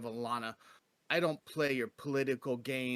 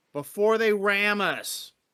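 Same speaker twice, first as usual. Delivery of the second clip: very loud, high-pitched screaming; 7 semitones higher, 9 dB louder than usual. A player's character screams into a ship captain's ear, screaming orders. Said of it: "I'm gonna scream at that captain right in his ear".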